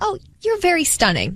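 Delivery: sincere, genuine, honestly meant tone. Showing how a harmless compliment sounds: genuine complimenting tone. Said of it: "See that tone?".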